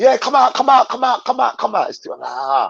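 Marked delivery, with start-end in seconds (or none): 0.0-1.9 casual put-on London accent, pitched up. Retelling a friend's phone call, imitating him in a London accent. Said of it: "I'm just using my London accent".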